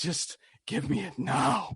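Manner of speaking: airy, breathy voice. Imitating the movie's women reacting to a Musketeer: put-on breathy voice. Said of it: "talking in this breathy voice".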